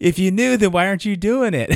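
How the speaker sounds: high, loud shout.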